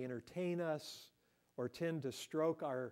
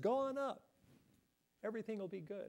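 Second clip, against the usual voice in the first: sarcastic, sneering, mocking, pitched-up tone; 6 semitones higher than usual. Retelling a story, speaker acts out Micaiah's words to Ahab; acting out mocking words. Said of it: "he kind of mockingly says".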